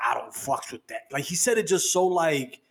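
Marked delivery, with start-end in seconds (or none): 0.0-1.0 acted, heated, vehement angry voice. Retelling what someone said with such anger: imitating someone saying it angrily. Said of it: "with such anger".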